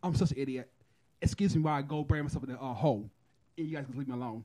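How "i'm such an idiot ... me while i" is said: usual speaking voice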